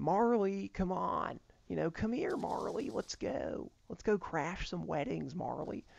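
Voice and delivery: easy, creaky, unhurried delivery. Showing how to do a celebrity impression, higher voice: Owen Wilson impression. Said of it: "if we were doing Owen Wilson".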